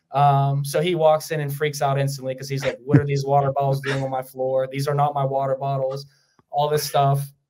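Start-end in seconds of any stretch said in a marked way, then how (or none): none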